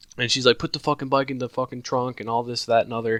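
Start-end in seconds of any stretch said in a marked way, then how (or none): 0.6-2.2 scream, higher pitch.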